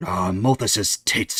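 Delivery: cursing under breath, muttered. A character realizes two companions are missing and curses under his breath. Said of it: "he curses under his breath".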